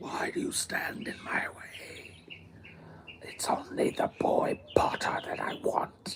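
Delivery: hushed, breathy, whispered dark-lord villain voice. Imagining a villain answering someone in his way: Voldemort voice. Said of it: "Voldemort would be like".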